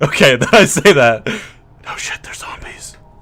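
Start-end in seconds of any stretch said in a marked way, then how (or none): 1.3-3.0 hushed, barely voiced whisper. Told he can only reply in a whisper, the player answers, whispered. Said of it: "you can reply in a whisper ... Sounds nicer as a whisper".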